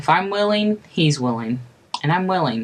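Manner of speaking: plain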